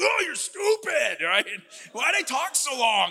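very high, loud, drawn-out, slow belted outburst. Retelling scolding himself in the car after a first date: Chris Farley impression. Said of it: "I did my Chris Farley impression".

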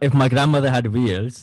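put-on Italian accent, slow and loud. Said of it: "Good Italian accent there".

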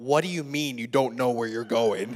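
very deep, low, let-down, disappointed dad voice. Retelling a man questioning where she's going, imitating a disappointed father voice. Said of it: "in the most disappointed father voice ever".

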